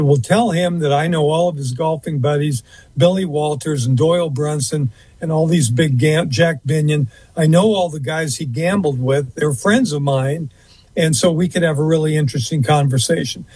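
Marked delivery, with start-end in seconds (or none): none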